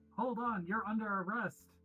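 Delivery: high, loud, commanding in-character yell. Playing the character Conti, halting two strangers in a meeting: in-character yell. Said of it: "Conti yells".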